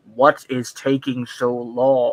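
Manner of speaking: very slow, with each word drawn out. Retelling what a Vader cosplayer said during a photo: Darth Vader voice. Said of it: "Vader turns to me, and he's like".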